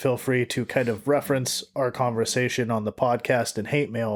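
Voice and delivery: normal talking voice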